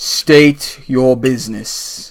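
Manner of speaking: deep, demanding voice. Voicing an unseen guard in the mist: deep booming voice. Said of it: "a deep booming voice goes".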